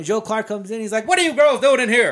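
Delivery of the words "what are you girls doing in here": loud, high-pitched yell. Retelling a movie scene where the principal walks in: imitating Joe Clark yelling. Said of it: "ninety percent of his dialogue is yelled".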